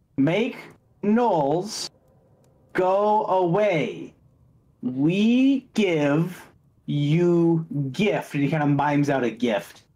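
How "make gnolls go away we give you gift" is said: very slow, each word clearly enunciated. A lord replies to the party, enunciating each word slowly. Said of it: "He enunciates each word as he slowly replies".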